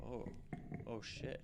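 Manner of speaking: hushed, breathy whisper under the breath. Voicing lab-coated onlookers reacting after an intimidation roll: whispering. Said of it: "you can hear whispers and some of them saying".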